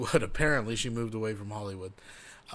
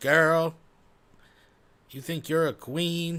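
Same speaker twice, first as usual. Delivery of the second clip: phony put-on slang voice, high and slow; 5 semitones higher than usual. Mocking how she talks about others: imitating her put-on slang talk. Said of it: "She starts talking like this".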